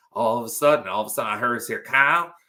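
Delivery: Southern drawl accent.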